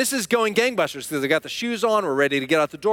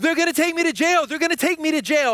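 mock screaming, higher; 9 semitones higher than usual. Retelling how the son reacted in the car seat: imitating son screaming. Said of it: "He's screaming".

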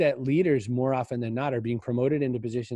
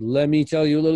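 mock-angry, through gritted teeth, louder, higher; 3 semitones higher, 8 dB louder than usual. Retelling what the speaker's mom said when really mad, imitating mom through gritted teeth. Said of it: "usually through gritted teeth".

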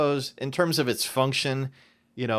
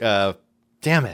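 usual speaking voice

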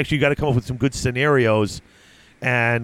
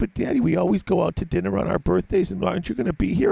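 mock, high, tearful child voice close to tears; 7 semitones higher than usual. A father retells what his daughter said, imitating a teary daughter. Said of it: "my one daughter's already getting teary".

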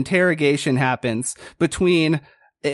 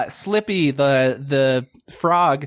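plain

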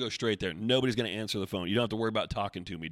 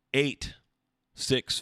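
a little slower, higher, louder; 4 semitones higher, 4 dB louder than usual. Repeating a phone number for Paula, a little slower. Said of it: "I'm going to say it a little bit slower here".

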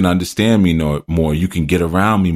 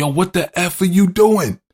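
mock shrill shout, very high-pitched; 13 semitones higher than usual. Retelling a long slide off a bike, speaker re-enacts yelling at the other rider: retelling a yell. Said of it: "And I'm yelling".

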